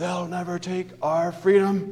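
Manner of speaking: high, rousing battle-cry yell. Imagining Jesus raising his voice before the disciples in the garden, imitating Mel Gibson's Braveheart yell. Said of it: "raised his voice and yelled, a la Mel Gibson in Braveheart".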